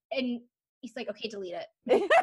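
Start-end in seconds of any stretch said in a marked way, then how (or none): 1.1-2.1 unimpressed, matter-of-fact tone. Retelling a friend's reply to news about a message: imitating Randy sounding unimpressed. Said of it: "Randy sounds so unimpressed with this update".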